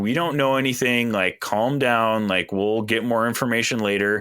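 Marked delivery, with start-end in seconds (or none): none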